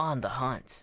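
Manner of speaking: voice with audible grain and edge. Showing how to voice a companion's line: grain and edge to the voice. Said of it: "grain and edge to your voice".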